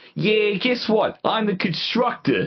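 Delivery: very high, put-on Boston accent. Pretending to be a constructor, in a put-on Boston accent. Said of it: "it'd be hilarious if I just sounded like a Boston accented".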